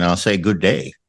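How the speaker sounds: joking put-on Canadian accent. Saying goodbye to the Colonel as a joke: put-on Canadian accent. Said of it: "I'll sound like a Canadian".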